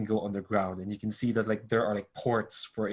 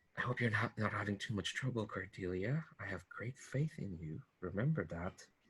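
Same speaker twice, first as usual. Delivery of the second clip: soft-spoken, very quiet, hushed voice; 12 dB quieter than usual. A woman holding up a data pad speaks to someone over it; soft voice. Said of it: "hear that soft voice".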